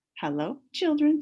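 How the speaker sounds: sugary sweet, very high voice. Reading a story aloud, someone arrives and greets the children in a sweet voice. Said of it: "said someone in a sweet voice".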